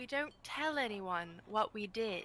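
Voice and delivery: low, hushed delivery. Retelling what she told Morton and Peach, in a lowered voice. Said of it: "she lowers her voice and she's like".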